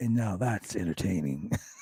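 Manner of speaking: eerie, creepy, off-putting, unsettling delivery. Retelling how a wrestler ended a segment: imitating a creepy line delivery. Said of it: "That sounds so creepy when you said it like that".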